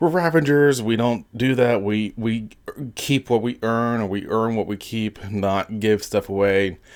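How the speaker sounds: pissy griping voice.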